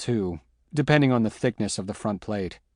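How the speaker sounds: ordinary delivery, nothing marked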